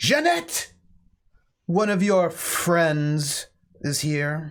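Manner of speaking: calling out. Retelling a woman opening the door and calling into the house, calling out. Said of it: "she calls out and she goes".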